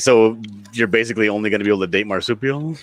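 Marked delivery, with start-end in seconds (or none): none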